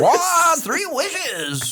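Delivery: bad, very high-pitched, squeaky comic voice. Joking about a genie, doing a bad Jerry Seinfeld impression. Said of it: "That was a bad Seinfeld".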